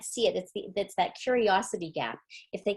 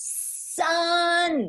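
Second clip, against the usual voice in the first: loud, very high, raised push on "sun"; 9 semitones higher, 4 dB louder than usual. Describing their first attempt to say the word fast, imitating kids saying it louder. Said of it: "somehow they think that means saying it louder".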